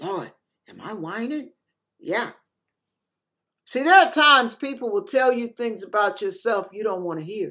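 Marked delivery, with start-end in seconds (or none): 0.0-1.5 quiet, hushed half-whisper under the breath. Retelling a quiet question to the Lord after correction: retelling a half-whisper. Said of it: "I whispered to the Lord".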